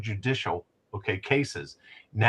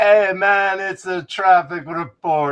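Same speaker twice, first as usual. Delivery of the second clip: very loud, high, put-on Jamaican accent; 8 semitones higher, 8 dB louder than usual. Joking about doing a Haitian traffic report on the radio: mock Jamaican accent. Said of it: "No, that's Jamaican".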